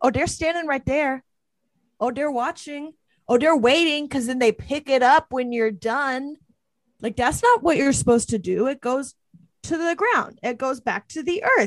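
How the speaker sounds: heated, worked-up, fired-up rant. Ranting in character to another speaker: getting heated. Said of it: "I get a little heated about this one".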